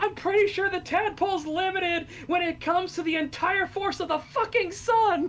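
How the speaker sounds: play-acted, high, furious, enraged screaming. Retelling a game character getting right up in the player's face, mock angry scream. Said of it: "gets so fucking mad and he gets right up in your face and starts screaming".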